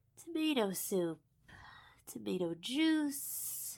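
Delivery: very quiet, slow, hushed mumbling mutter. Reading a story aloud, a character at the table mutters under her breath. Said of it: "She muttered under her breath".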